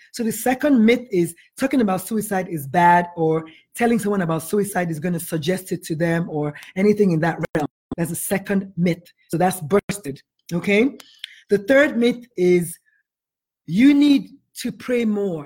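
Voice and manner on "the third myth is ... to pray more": very slow, measured, deliberate, word-by-word delivery. Listing myths one by one, naming the third: said very slowly. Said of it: "I have to say that very slowly".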